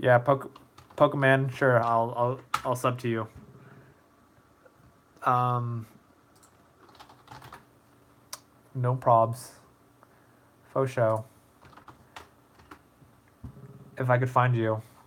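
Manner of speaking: losing voice, talking softly. Reading viewer comments while losing voice: losing voice, speaking quieter. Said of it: "I'm losing my voice right now".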